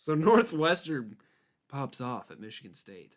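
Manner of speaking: sarcastic, mocking, swooping sing-song delivery. Starting a line over so the sarcasm comes through: sarcastic. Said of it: "Can you feel the sarcasm?".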